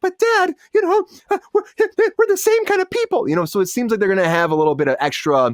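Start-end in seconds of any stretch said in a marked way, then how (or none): 0.0-3.3 squeaked out very high. Describing a cartoon scene where the daughter answers her dad, in a Mickey Mouse voice. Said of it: "Was that a Mickey Mouse voice?".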